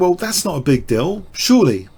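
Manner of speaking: ordinary delivery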